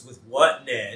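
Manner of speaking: dripping, heavy sarcasm, acted out. Retelling a scene, the speaker quotes a woman's reply: retelling a sarcastic line. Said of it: "real sarcastic".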